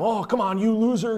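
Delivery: acted yelling. Describing a driver cut off in traffic, retelling him yelling at the other driver. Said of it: "he's yelling at him".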